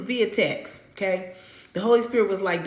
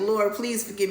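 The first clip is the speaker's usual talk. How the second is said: mock tearful wailing. Retelling crying out to the lord after sending a rude text: mock crying. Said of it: "hollering like [name], crying like".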